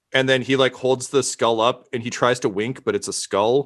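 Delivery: ordinary talk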